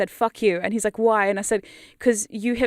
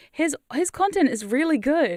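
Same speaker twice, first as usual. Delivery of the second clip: surprised, shocked-sounding, pitched-up tone; 5 semitones higher than usual. Giving a shout-out to a fellow creator, sounding shocked. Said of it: "I sound shocked when I say that".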